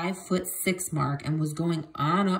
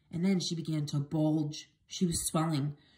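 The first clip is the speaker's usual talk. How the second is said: ordinary delivery, nothing marked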